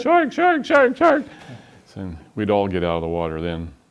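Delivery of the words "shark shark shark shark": put-on very high, very loud, shrill little-girl scream. Retelling clinging to the capsule when a shark appeared, screaming like a seven-year-old girl. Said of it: "I sounded like a seven-year-old girl at a birthday party hanging on the side of the capsule screaming".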